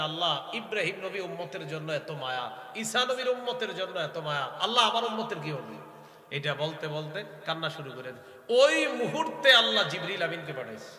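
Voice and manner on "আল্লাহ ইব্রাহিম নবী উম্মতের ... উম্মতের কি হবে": ordinary talk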